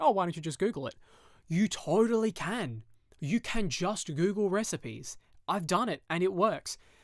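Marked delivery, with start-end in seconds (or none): 0.0-0.9 snide, sarcastic, dismissive jab. Quoting the speaker's dad when asked something, imitating a sarcastic remark. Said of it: "he'll sarcastically say".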